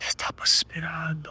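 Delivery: eerie, ghostly, quiet whisper. Acting out a last whisper in a character's ear: ghostly whisper. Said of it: "un último susurro en su oído".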